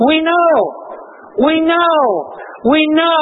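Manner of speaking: high, ringing, joyful, exultant voice.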